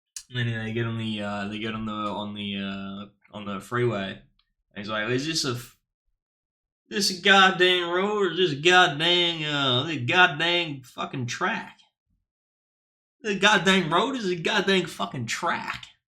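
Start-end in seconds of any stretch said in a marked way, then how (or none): 5.1-15.8 put-on Texan accent sliding into Australian, higher pitch. Telling a joke, quoting a driver on the freeway: Texan accent that sounds Australian. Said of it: "That's a perfect accent".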